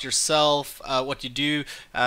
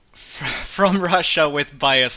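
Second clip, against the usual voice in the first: loud, words breaking up with held-back laughter; 5 dB louder than usual. Announcing the episode title, laughing while talking. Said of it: "I'm trying to say that without laughing".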